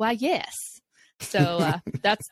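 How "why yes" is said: put-on "yes" said with a slight Southern accent. Retelling own reply to a job offer: Southern Scarlett O'Hara yes. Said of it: "That's like a little Southern, like a Scarlett O'Hara kind of yes".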